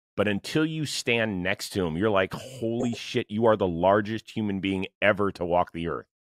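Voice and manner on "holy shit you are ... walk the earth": usual speaking voice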